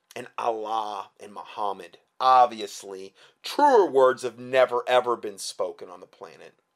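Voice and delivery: thick, dripping sarcasm, voice dropped low. Speaker working through a numbered list, saying this with heavy sarcasm. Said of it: "that was about as much sarcasm as I could possibly interject".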